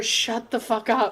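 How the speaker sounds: barely audible, very quiet whisper. Sending a secret spell message to another character: whispering. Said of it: "I'm just gonna whisper".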